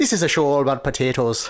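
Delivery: put-on mock Irish accent. Introducing the show to the co-host, in an Irish accent. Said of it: "Why are you doing Irish?".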